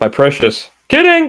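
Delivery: copied cadence and delivery, pitched very high. Recalling a movie line, copying its exact cadence: imitating Jimmy Fallon's line delivery. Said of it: "That's actually the exact line, the exact cadence".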